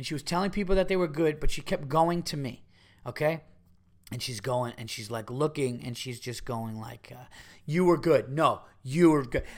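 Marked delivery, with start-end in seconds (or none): 7.6-9.4 mock drunken speech, woman's voice. Retelling a drunk fan's compliments after a show: imitating a drunk woman. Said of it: "this drunk fuck".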